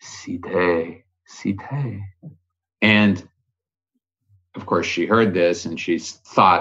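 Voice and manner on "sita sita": tiny, hushed, very small, soft voice. Storyteller voicing Hanuman calling out to Sita, in a very small voice. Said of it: "So in a very small voice".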